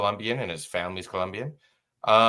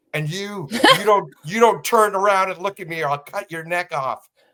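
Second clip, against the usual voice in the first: put-on high shouted yell, tripping over the start; 9 semitones higher, 4 dB louder than usual. Retelling a threat yelled by a homeless person: imitating a man yelling threats. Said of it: "And he's yelling at me".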